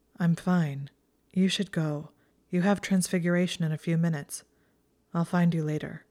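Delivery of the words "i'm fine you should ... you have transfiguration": usual speaking voice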